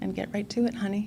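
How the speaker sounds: soft, sweet, honeyed coaxing voice. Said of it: "talking to me in a sweet tone of voice".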